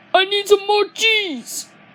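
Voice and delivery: excited, very high, loud squealing shout. Showing off an impression they can do, the speaker does a Shark Puppet impression. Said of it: "I can do a voice impression of Shark Puppet".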